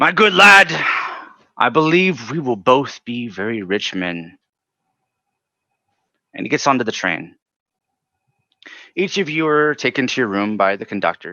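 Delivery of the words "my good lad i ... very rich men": very loud, big, boisterous talk. A game master voices a man patting the listener on the back, loud boisterous voice. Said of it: "And he's talking very loudly".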